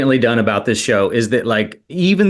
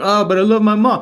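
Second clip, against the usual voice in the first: bad, very high put-on Italian accent; 9 semitones higher than usual. Mimicking a mafia movie tough guy: awful Italian accent. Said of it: "I just did that awful Italian accent".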